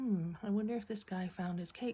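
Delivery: normal talking voice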